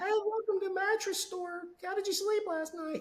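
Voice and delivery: way-up, high-pitched store greeter sales patter. Showing how not to greet store customers: high-pitched sales voice. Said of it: "high pitched voice, sales voice".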